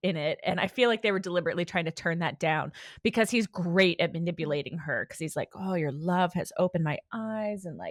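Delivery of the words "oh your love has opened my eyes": put-on hot, seductive delivery. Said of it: "the delivery in the sub is much more, like, hot".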